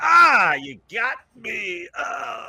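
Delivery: shrill, booming, very high, drawn-out wounded wail. Voicing an enemy just struck in the gut by an axe: unhappy wounded enemy. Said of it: "looking real fucking unhappy ... he's like".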